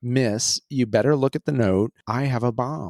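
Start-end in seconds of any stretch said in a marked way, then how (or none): none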